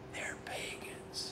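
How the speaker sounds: put-on eerie, breathy, creepy whisper. Quoting scripture to listeners: Joe Biden creepy whisper. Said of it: "I'm gonna do a Joe Biden".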